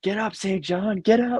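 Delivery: high celebratory screaming and yelling. Retelling the guys walking down the street with the cup: imitating the guys screaming. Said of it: "the guys just screaming".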